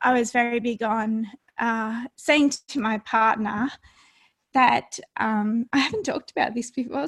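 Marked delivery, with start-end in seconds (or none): 0.0-5.7 growing emotional, hesitant, halting delivery. Recalling feelings about the birth of a baby: getting emotional. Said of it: "so I'm getting a bit emotional".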